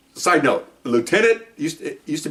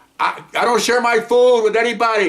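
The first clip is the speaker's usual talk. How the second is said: high, loud, proud put-on voice. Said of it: "Everybody watch Friends? Joey?".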